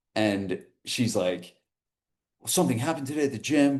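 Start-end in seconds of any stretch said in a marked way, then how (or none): 2.5-3.8 frantic, fast, high-pitched rush of words. Speaker retells a phone call from one of their trainers, imitating a frantic trainer. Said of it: "a frantic phone call from one of my trainers".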